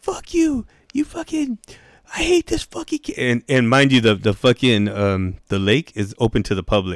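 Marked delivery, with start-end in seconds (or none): 0.0-3.4 put-on play-acted very high, shrill kid's yell, swinging all over. Retelling a kid at a public lake cursing at the speaker: retelling a kid yelling. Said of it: "He's fucking yelling at me".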